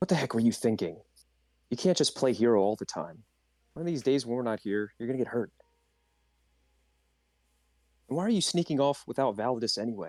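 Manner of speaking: muttering under the breath. In a role-play, the character turns to the princess, muttered under breath. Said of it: "under my breath turn to the princess and go like".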